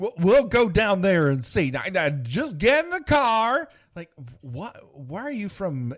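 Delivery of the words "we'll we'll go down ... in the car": very loud, high, put-on Southern deputy voice. Imitating a sheriff's deputy from a movie: imitating deputy's Southern accent. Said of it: "a mystery Southern accent".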